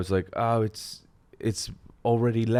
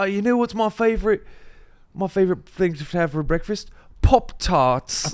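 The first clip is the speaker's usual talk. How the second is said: chatty, higher-pitched put-on British accent; 9 semitones higher, 4 dB louder than usual. Retelling a school trip joke: imitating a british accent. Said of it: "talking in a British accent".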